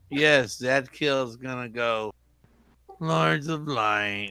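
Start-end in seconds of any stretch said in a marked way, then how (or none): 3.0-4.3 sarcastic voice. Voicing a character calling on the Lords of Light: sarcastic in-character line. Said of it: "I sense sarcasm".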